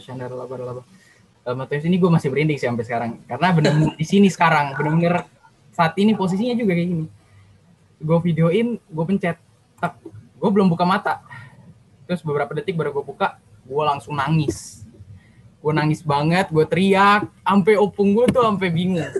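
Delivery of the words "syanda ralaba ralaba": soft, low murmured babble. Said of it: "bahasa roh".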